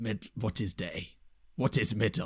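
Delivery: put-on primitive caveman voice. Improvising together, explaining a sundial in character, caveman voice. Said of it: "I forgot how vivid your characterization was".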